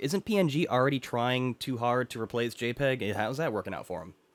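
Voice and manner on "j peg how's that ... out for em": ordinary talk, nothing marked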